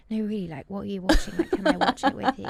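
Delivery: unnerving, creepy, pushy, loud put-on voice. Acting out asking a stranger to watch their phone: acting creepy. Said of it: "it's so unnerving and creepy".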